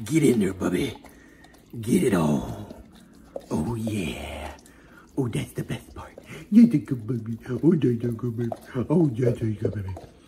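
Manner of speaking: low, special put-on voice. Speaker talking to the dog in the dog voice. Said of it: "We've got to have that dog voice".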